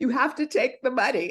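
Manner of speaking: put-on tearful voice. Retelling how she begged a bank teller to take the money: imitating crying. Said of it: "crying at the teller".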